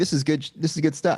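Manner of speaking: ordinary talk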